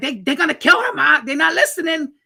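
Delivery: high-pitched, frantic, desperate, freaked-out pleading tone. Retelling the sister telling the mother the hospital isn't listening, imitating a panicked sister. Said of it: "And she's freaking out".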